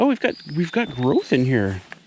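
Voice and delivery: sounding genuinely astonished, exclaiming in surprise. Checking the garden and spotting new growth: surprised. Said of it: "Why do I sound so surprised".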